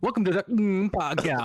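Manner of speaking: choppy, dropping-out delivery. Telling the host his intro dropped out, the speaker is imitating audio cutting out. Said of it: "What we heard was".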